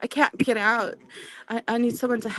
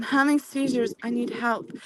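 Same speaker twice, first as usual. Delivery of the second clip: ordinary talk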